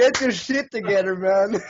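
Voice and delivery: high voice, words breaking up with laughter. Laughing hard with another speaker, laughing while talking. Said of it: "Stop laughing".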